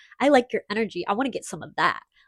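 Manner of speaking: mock hungry, devouring, predatory tone. Retelling what his friend, a girl, said while closing in, imitating a hungry tone. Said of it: "she said it like with this like hunger".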